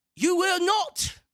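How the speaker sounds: put-on British accent, very high. Describing a one-sided match, the speaker voices a line in a British accent. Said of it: "Why am I speaking with a British accent?".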